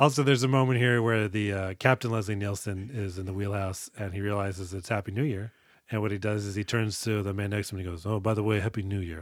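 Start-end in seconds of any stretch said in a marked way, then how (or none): 8.1-9.2 very dry deadpan voice, lower pitch. Describing a film scene, the speaker quotes the captain in Leslie Nielsen dry deadpan. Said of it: "Like in the most dry voice".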